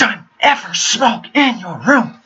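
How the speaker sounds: high, slow, venomous whisper. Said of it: "in a whispering but very venomous voice".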